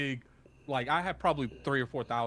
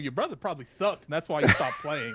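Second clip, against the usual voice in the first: acted dead-serious, matter-of-fact voice, high and swinging; 5 semitones higher, 4 dB louder than usual. Retelling a reply to the girl: imitating a straight voice. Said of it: "with the most straight voice".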